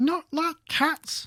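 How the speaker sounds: shrill, very high, impassioned, passionate squeal. Reading a story aloud, the mouse answering a girl's apology, shrill and passionate. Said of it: "cried the mouse in a shrill, passionate voice".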